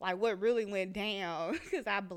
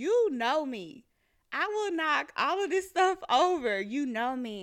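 loud, high, unhinged, menacing outburst, losing control; 6 semitones higher, 6 dB louder than usual. Recounting blacking out, she quotes what she told a high-school classmate, retelling losing it. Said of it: "I'm losing it".

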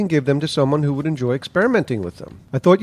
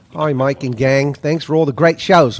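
put-on Australian accent, faster. Reading out a listener's message to the hosts, in a put-on australian accent. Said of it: "I'm dropping the Australian accent".

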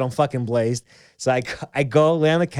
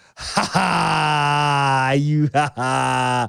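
put-on self-mocking tone, much slower. Retelling looking at himself in the mirror, reenacting mocking himself. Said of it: "I'm just mocking myself".

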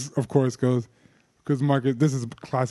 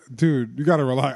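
normal talking voice

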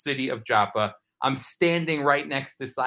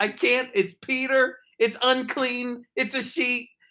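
mock very high, furious, angry tirade; 11 semitones higher than usual. Retelling how he upset an Israeli woman, imitating an angry woman. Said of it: "and she is just angry".

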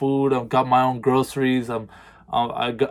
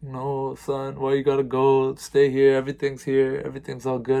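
put-on, tearful, crying voice. Retelling the mother's plea about moving out, imitating mom crying.

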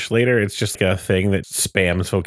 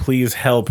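usual speaking voice

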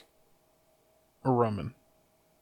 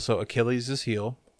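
usual speaking voice

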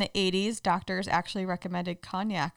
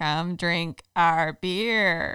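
loud, eerie, creepy alien voice, "beer" stretched out; 5 dB louder than usual. Asked by the host to do a best alien voice, creepy alien voice. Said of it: "you do your your best alien voice".

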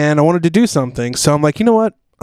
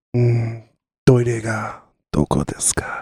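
put-on seductive tone in Japanese, lower and quieter; 4 semitones lower, 5 dB quieter than usual. Performing a Japanese phrase after others ask to hear it: mock sexy voice in Japanese. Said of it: "I can do some sexy Japanese".

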